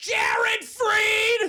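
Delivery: shrill, very high, loud scream. Retelling how a drunk woman greeted him at a restaurant, retelling a woman's scream. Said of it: "and she screamed".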